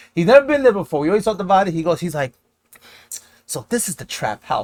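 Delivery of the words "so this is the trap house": clueless, oblivious delivery. Retelling what a friend said on entering the trap house: imitating Ronald saying it very loud. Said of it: "mad loud".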